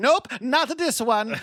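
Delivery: exaggerated fake Italian accent. Imagining an alchemist cracking open bugs: terrible stereotype Italian accent. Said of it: "that was a terrible stereotype of your accent".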